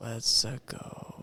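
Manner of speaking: quiet mutter. Retelling how Mario's trailer line was said: Chris Pratt Mario line under breath. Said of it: "like, under his breath, like".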